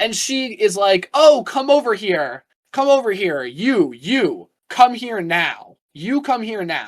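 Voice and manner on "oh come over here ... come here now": mock woman's voice, yelling and calling out loudly. Retelling how a lady called them over from a restaurant: imitating a woman yelling. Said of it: "the way she was yelling at us and her, her voice".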